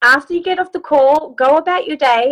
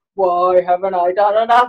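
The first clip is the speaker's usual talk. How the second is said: put-on very low, deep, slow old-Western hoedown cowboy voice; 8 semitones lower than usual. Coaching someone to ask themselves the question like a cowboy, old Western cowboy voice. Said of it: "do it like you're a cowboy, like in an old Western movie".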